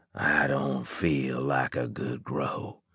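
soft, croaking voice. A man answers Anne after she lets go of his eyelid, in a croaking voice. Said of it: "he said in a croaking voice".

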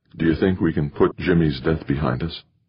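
plain reading voice

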